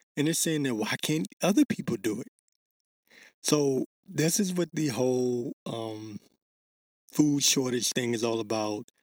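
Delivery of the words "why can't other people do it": ordinary delivery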